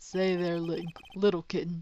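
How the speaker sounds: put-on soft, creepy, coaxing old-man voice. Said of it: "Why do you sound like a creepy old man trying to lure a child?".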